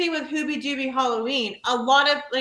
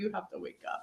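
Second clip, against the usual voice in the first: mock half-whispered, breathy, tearful sobbing bawl; 4 semitones lower, 14 dB quieter than usual. Retelling waking someone up while crying at a film: imitating own bawling. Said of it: "bawling like".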